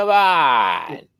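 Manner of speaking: fake, bad, high-pitched, squealing New York accent. Complaining about a guy who does his New York accent all game: mocking bad New York accent. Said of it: "It's a little high pitched squeal".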